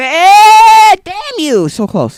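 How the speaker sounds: very high, very loud, slow scream, damn drawn out. While bowling, the speaker reacts to a throw that came so close, screaming. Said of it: "Sorry, I'm screaming".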